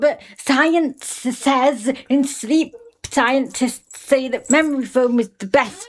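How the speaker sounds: high, slow, mocking, hyped-up voice. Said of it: "they're like".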